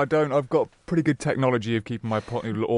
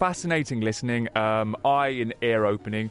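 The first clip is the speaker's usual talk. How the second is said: plain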